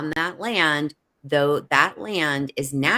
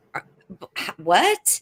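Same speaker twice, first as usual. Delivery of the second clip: put-on stuttering in shock, higher pitch; 4 semitones higher than usual. Retelling a man's shocked reply about the pamphlet: imitating someone stuttering in shock. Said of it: "And he stuttered".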